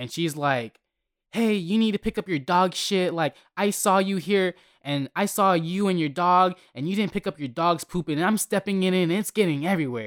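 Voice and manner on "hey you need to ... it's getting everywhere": irate, high-pitched scolding voice. Recounting an old lady confronting the speaker in front of everybody, imitating her yelling. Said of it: "she starts yelling at me in front of everybody".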